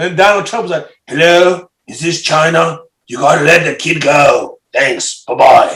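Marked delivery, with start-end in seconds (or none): 1.1-5.8 put-on impersonated voice with a slight British accent. Retelling a phone call to China as Donald Trump: Donald Trump impression. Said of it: "that was a Trump impersonation?".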